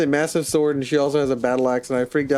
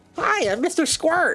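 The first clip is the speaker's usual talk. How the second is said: very high, silly, goofy little goblin voice. Describing a role-play character, introducing themselves in a goofy goblin voice. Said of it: "A little goofy goblin".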